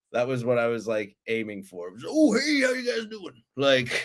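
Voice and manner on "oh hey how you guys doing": very high, nice, friendly uncle voice. The speaker shows the voice they were going for in their film: nice uncle voice. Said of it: "I was going for, like, nice uncle".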